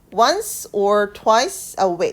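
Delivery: heavy stress on "once" and "twice". Rereading the phrase with stress on the number of times: stress on once and twice. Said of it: "횟수에 강세를 두어서 다시 읽어볼게요".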